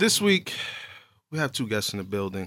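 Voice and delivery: line breathed out on a sigh. A podcast host introduces this week's two guests, with a sigh. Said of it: "Why do you have to say it with a sigh?".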